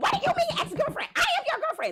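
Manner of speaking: furious outburst, very high-pitched and swooping. Retelling confronting her boyfriend through his apartment door: retelling livid outrage. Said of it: "So I am livid".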